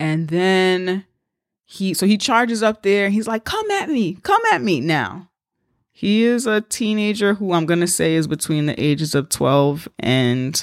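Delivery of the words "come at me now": mock scream, higher and slower. Retelling a teenager charging at lined-up police, imitating his scream. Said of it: "So he's screaming at the cops and stuff".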